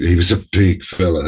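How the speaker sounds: ordinary talk, nothing marked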